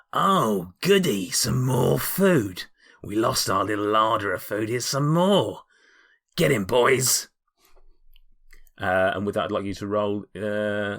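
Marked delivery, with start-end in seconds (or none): 0.2-7.3 loud, commanding in-character monster creature voice. Voicing the creature in charge as it spots the players. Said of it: "he looks at you and goes".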